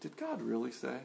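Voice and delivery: low, hushed, coaxing, tempting half-whisper. Preaching about temptation, voicing the devil's half-whisper: imitating the devil half-whispering. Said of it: "He just whispers".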